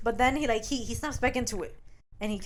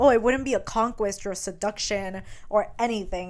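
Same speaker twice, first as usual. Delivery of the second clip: normal talking voice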